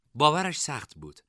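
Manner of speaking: ordinary delivery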